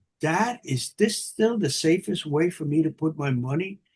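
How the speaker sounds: put-on, very quiet, hushed voice. A father retelling his daughter's phone question, imitating her speaking very quietly. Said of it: "she very quietly says".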